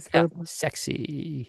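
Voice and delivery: soft, creaky vocal fry, scratchy crackle at end. Showing another speaker an example of vocal fry when asked: vocal fry. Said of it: "like that".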